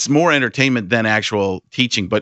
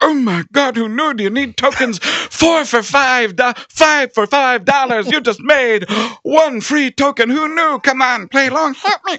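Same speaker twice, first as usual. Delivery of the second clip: very high, drawn-out, zany patter; 14 semitones higher than usual. Retelling working at a softball place: Robin Williams impression. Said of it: "I just used to walk around as Robin Williams going".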